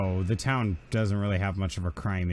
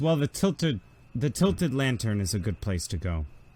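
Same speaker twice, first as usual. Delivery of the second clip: ordinary talk, nothing marked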